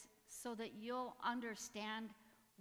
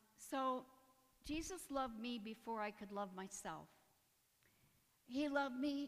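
tearful, emotional voice. Giving a personal testimony about being loved, emotional. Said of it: "I'm sorry I'm so emotional over it".

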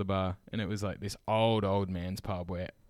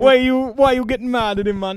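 very high, very loud, yelled put-on Jamaican accent; 13 dB louder than usual. Retelling how a teacher scolded a team mum: imitating a teacher in a Jamaican-sounding accent. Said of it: "sounding Jamaican now".

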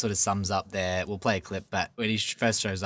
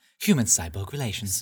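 put-on robot voice. Discussing protocol droids, quoting the droid's catchphrase in a C-3PO voice. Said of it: "You sound like Siri".

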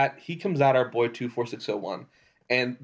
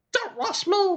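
very high, helium-balloon voice. Player voicing Kay, forcing a gap for the Emperor to hobble through, very high helium voice. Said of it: "but in a very high helium-induced voice".

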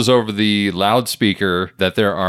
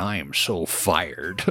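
put-on old security guard voice, lower and quieter; 4 semitones lower, 9 dB quieter than usual. Retelling a cameo as the old security guard: Stan Lee voice. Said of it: "in a very Stan Lee-y sort of way".

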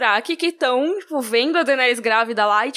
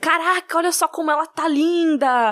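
put-on, slow, admiring, praising call-out; 3 semitones higher than usual. Retelling a crowd shouting praise at a woman passing by, mock admiring shout. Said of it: "mas tipo glorificando".

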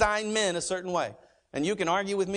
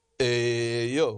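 very low, deep tough-guy voice; 8 semitones lower than usual. Acting out a guy asking a woman out, in a Rocky voice. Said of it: "when I do men voices, I sound like Rocky".

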